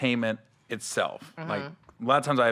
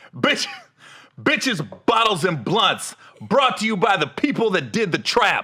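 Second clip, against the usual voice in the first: TV promo announcer voice, higher and louder; 6 semitones higher, 4 dB louder than usual. Saying the made-up show title again as asked: TV show promo announcer voice. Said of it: "But you gotta say it like that".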